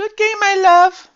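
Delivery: very high put-on woman's voice. Narrating a game where she kisses Atticus, in a put-on woman's voice. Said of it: "I'm surprised I even did the woman voice".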